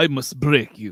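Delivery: menacing, villainous, threatening voice. Answering an insult in a roast battle: Ivan Drago voice. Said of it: "the champ, Ivan Drago".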